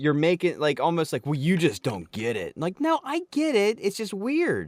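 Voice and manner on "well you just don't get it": mock snooty, superior, condescending put-down tone. Imitating art lovers who look down on you: imitating a mocking tone. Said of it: "it's almost like you're mocking me".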